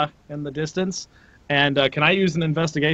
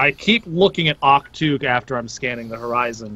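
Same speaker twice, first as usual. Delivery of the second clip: usual speaking voice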